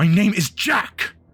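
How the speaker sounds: high, loud, furious shout, spat out. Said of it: "He spits, he goes".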